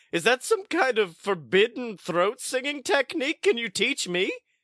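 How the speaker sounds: brash, excitable, gravelly, very high swooping party-dude voice. Playing a character in a tabletop game who questions another about a technique and asks to learn it, in a brash, excitable party dude voice. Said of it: "And your truth is that you are a cool, cool party dude whose name is [name]. ... Never heard a gravelly falsetto before".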